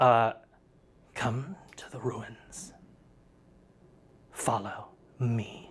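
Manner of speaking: whispering. Game narrator voicing a detached voice heard within a player's soul, whispering. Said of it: "you just hear a whisper".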